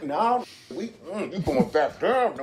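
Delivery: slow, drawn-out, deliberate octopus voice. Retelling a diver video, voicing the octopus fighting the diver: voicing the octopus. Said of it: "the octopus is still like".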